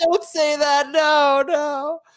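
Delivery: high, squealing mock-distressed father voice.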